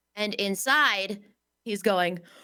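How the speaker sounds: ordinary talk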